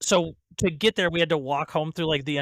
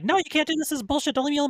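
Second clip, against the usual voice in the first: mocking yappy pleading voice, pitched higher; 11 semitones higher than usual. Retelling a girl pleading as the speaker leaves: imitating someone yapping. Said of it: "yapping in my ear like a fucking chihuahua".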